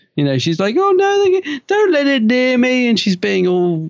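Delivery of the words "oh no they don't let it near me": put-on very high, feeble, helpless, panicked screaming. Mocking a character's weak performance in peril: imitating Nyssa's pathetic screaming. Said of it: "she's, like, screaming, and it's, it's pathetic".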